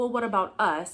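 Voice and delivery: ordinary talk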